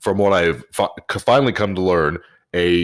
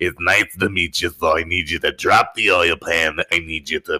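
put-on heavy chain-smoker voice, slower. Retelling what a woman said to him, imitating a heavy smoker's voice. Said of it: "she sounds like she smokes a carton and a half a day".

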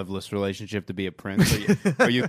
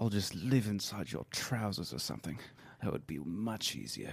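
very quiet, murmured, put-on British accent; 4 semitones lower, 14 dB quieter than usual. In a dramatization for listeners, you play the man in the quote: Charles in a British accent. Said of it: "I do a pretty wicked British accent".

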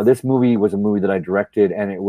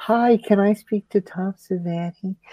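put-on very high, slow, drawn-out childlike voice; 11 semitones higher, 3 dB quieter than usual. Retelling a phone call made at twelve years old: imitating own twelve-year-old voice. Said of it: "so I probably talked like this at that time".

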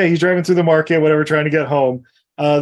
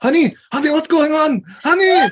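mock panicked calling, much higher; 11 semitones higher than usual. Retelling a husband on the phone as his wife is attacked: mock-panicked calling. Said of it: "acting out husband hearing wife attacked".

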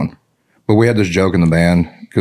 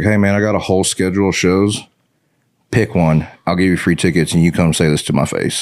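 ordinary talk, nothing marked

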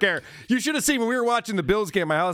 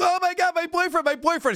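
put-on crazed voice, much higher and slower; 10 semitones higher than usual. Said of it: "going nuts".

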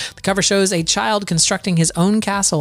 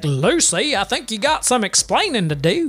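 put-on country accent; 2 semitones higher than usual. Describing the Arkansas version of the show, as a country-accent Ricky Ricardo. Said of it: "had like had a country accent".

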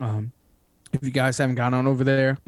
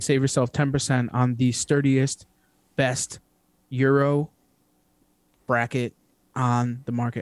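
very slow, deliberate, drawn-out delivery. Reading a promo code for the last time this season, deliberately slow. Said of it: "I purposely did that slow".

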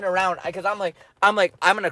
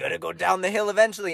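put-on devil voice. Retelling a story, the speaker voices his own devil; devil voice. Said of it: "my devil sounds a poker like voice".

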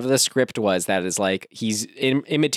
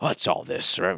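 imitated mumbling, much lower; 5 semitones lower, 5 dB quieter than usual. Describing a man heard close on the mic, imitating him mumbling to himself. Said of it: "when he's just mumbling, talking to himself".

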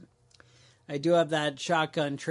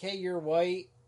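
normal talking voice

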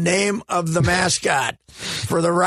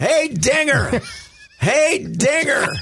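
put-on yelling, pitched higher; 8 semitones higher than usual. Retelling an invented episode scene at a baseball game, imitating someone yelling. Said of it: "So Jerry starts yelling".

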